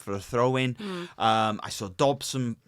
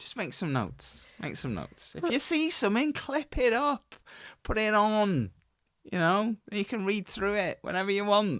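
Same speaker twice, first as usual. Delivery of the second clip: fake Manchester accent, pitched high; 10 semitones higher than usual. Telling a co-host to make notes and clip things: put-on manchester accent. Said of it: "Sound like from Manchester".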